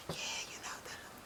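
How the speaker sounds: very quiet, breathy, barely voiced whispered murmur. Imitating a reality show participant who kept talking to her partner: imitating someone whispering. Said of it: "Monica was, like, whispering a lot".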